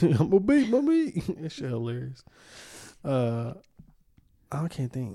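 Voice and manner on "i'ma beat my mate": very high-pitched, cartoon dog-style voice. Quoting a clip he finds hilarious to friends, in a Goofy voice. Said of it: "Goofy from Mickey Mouse".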